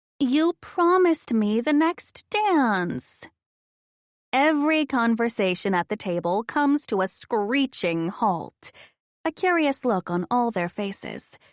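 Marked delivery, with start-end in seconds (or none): 0.2-3.3 exaggerated, over-the-top high-pitched whiny voice. Narrator playing a possessive girlfriend at a table: over-the-top whine. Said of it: "I go with an over-the-top whine".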